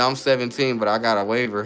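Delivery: ordinary talk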